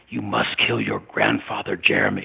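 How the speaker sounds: sinister, menacing, spat out, with swooping pitch. A creature in the kitchen shadows addresses jeremy, spitting in a sinister tone. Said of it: "The creature spat in a sinister tone".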